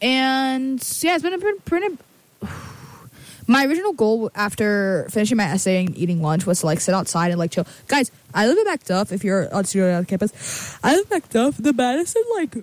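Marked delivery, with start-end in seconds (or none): 10.8-12.5 talking through a yawn, pitched up. Chatting to viewers about her day, yawning. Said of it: "Excuse me, I'm yawning".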